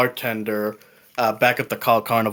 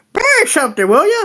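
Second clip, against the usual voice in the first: put-on very high, loud, raised old-woman voice; 7 dB louder than usual. Game master voicing a Kenku shopkeeper behind a counter, in an old woman's voice. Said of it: "in an old woman's voice".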